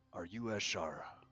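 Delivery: very soft, gentle, soothing, quiet voice. Character approaching a seated figure and bending down to ask its name: very soft, calming voice. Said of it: "In a very soft, calming voice".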